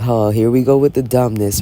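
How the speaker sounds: ordinary talk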